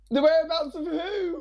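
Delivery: put-on piercing, very high-pitched, shrill kid's yell. Telling of a kid who threw stones, the speaker imitates the kid shouting. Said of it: "one of them shouts".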